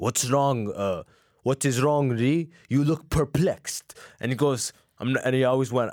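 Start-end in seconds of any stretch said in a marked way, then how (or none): 0.0-3.9 put-on French accent. Imitating a french drill sergeant picking on lee, in a french accent. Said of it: "He had a French accent".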